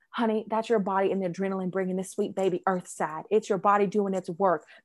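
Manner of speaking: sweet, put-on Southern lady accent. Retelling what an older southern lady told her, in a put-on southern accent. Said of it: "I'm making a Southern accent".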